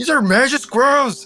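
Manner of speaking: panicked voice.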